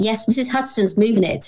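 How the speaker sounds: plain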